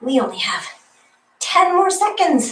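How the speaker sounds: high-pitched, desperate croaking voice. Leading a workout near the end of a set, with a desperate croak. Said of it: "the desperate croak in my voice".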